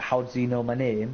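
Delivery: plain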